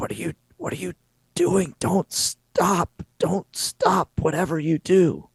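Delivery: rasping, very high-pitched voice. Narrating a scene where a woman turns to the listener, raspy voice. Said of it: "she very raspily says".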